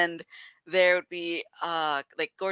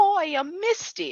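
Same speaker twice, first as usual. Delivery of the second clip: put-on strong, thick, very high-pitched Brooklyn accent; 13 semitones higher than usual. Quoting a GTA 3 character introducing herself, Misty from GTA 3 voice. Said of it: "the strongest Jersey accent that I can identify is Brooklyn".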